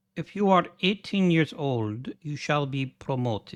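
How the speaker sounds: put-on, vague Russian accent. Speaker voices a game message aloud, in a vague Russian accent. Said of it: "I have no idea what accent I was going for there. Maybe Russian".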